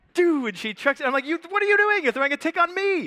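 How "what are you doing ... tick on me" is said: mock high-pitched, panicked, freaked-out outburst. Telling how someone chucked a tick onto them, the speaker reenacts a panicked outburst. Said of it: "And so now I'm freaking out".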